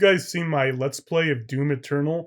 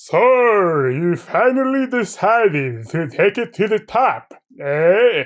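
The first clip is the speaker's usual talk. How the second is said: loud, booming vampire voice with "so" drawn out; 5 semitones higher, 7 dB louder than usual. Describing a scene to listeners, the speaker has the character speak: Dracula voice. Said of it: "is Dracula. And he says".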